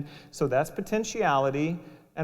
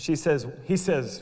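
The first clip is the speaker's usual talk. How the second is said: ordinary talk, nothing marked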